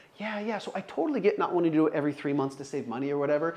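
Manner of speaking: understanding, empathetic voice. Demonstrating a call, agreeing with the customer: empathetic tone. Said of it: "I have a real like, like, Uh, empathetic tone here at the beginning. So listen to how I say it".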